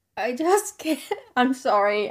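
slow delivery, words broken by nervous laughter. Reacting to a shocking true crime account, nervous laughing while talking. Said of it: "I should not be laughing".

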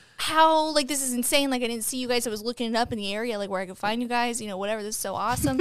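ordinary delivery

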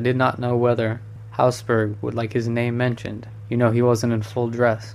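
plain

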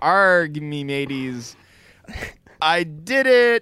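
clumsy, bad, high pirate voice. Describing a man who talks like a pirate, in a bad pirate voice. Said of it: "he talks like a pirate, but he like a bad pirate".

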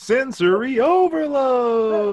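very high, loud announcer cry. Showing how a line should have been read, announcing a segment like Dana. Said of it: "announcing a segment".

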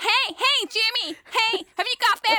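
very high, annoying, grating cartoon character voice. Complaining about a bedtime cartoon, mimicking its American Dad cartoon voice. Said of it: "stupid cartoon voices saying".

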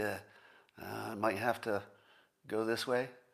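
put-on sheepish tone. Showing how he could have said it instead, mock-sheepish.

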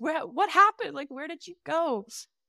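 put-on high, tearful, crying voice. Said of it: "we both just started crying".

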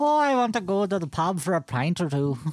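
put-on Irish accent. Repeating a line on request for the group to rate: put-on Irish accent. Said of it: "Let's rate [name]'s Irish accent".

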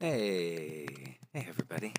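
soft, hushed. A podcast guest greeting the audience after being introduced, talking really quiet. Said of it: "Now you're going to talk really quiet".

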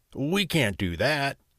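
slow, drawn-out, deliberate protesting tone. A father objects to his wife's plan to leave their children: protesting. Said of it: "protested the father".

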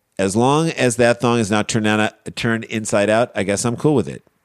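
ordinary talk

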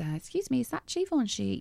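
put-on American accent. Retelling a woman outside a fashion show asking about givenchy, in a put-on american accent. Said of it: "that's my American accent".

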